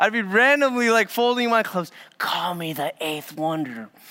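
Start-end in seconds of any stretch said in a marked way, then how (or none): 2.2-3.9 close, hushed half-whisper. Retelling how Monica crept up after winning: imitating a half-whisper. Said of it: "She'll come up and whisper to me".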